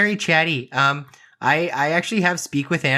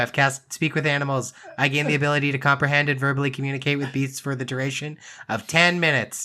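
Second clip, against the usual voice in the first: usual speaking voice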